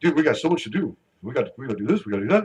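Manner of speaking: put-on laid-back dude voice. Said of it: "That's my Robbie impersonation".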